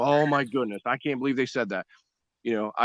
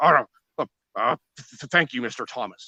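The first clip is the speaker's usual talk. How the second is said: grumbling, complaining voice; 4 dB louder than usual. Retelling how the prosecutors answered a thank-you: imitating someone grumbling. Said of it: "they were grumbling like".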